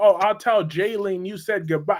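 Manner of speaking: ordinary talk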